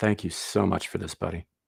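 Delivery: dripping with sarcasm. Thanking someone who may be listening, after complaining: heavily sarcastic. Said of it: "I say with all the sarcasm in the world".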